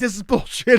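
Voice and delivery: put-on indignant, fuming, high, pissed-off outburst. Retelling how an upset woman reacted to a prank: imitating an angry woman. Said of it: "And she was super pissed".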